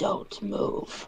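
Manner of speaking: hushed, rough, gravelly, demon-like whisper. Voicing your character in the middle of a scene, in a gravelly voice, not quite infernal. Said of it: "I use my uh infernal kind of like gravelly voice".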